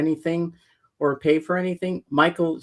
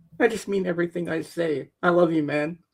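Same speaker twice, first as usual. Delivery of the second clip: words coming through happy tears, tearful. Thanking a friend and fellow streamer for being a good friend, crying happy tears. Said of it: "it's happy tears".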